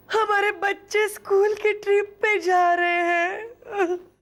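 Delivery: slow sobbing with audible breaths.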